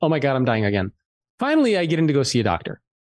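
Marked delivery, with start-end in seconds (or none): none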